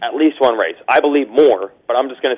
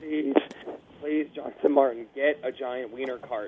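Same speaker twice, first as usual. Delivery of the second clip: very quiet, muffled, covered-up voice; 13 dB quieter than usual. Pleading with Jonathan Martin for a wiener cart: very quiet voice. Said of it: "Why is your voice all weird?".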